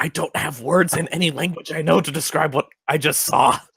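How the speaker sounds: whispering in character. Voicing a character who whispers about what they just saw: in-character whisper. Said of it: "I go over and whisper, blushing furiously".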